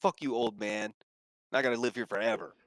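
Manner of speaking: western cowboy character voice. Voicing the cowboy who answers a player: cowboy character voice. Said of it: "He's like".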